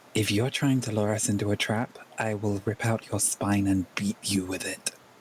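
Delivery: low, menacing, very intimidating voice. Voicing a character threatening a stranger telepathically: most intimidating telepathic voice. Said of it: "in the most intimidating telepathic voice he can manage".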